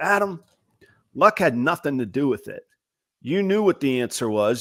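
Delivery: put-on strong North Carolina mountain Appalachian accent. Speaker quotes a man who stopped him mid-sentence, in a mountain appalachian accent. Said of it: "it's in a good, like, mountain Appalachian accent".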